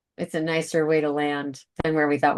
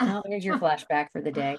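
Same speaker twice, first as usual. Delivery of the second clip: plain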